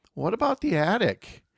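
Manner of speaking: put-on small, high, piping little boy voice. Retelling what a friend said after the group finished clearing out, little boy voice. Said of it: "he spoke up in his little boy voice".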